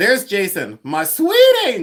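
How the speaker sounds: bad, loud, swooping, drawn-out put-on lady voice. Retelling how she greets you when she sees you, in a bad Pamela Blanchard impression. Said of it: "But she doesn't sound like that. She actually sounds like a woman".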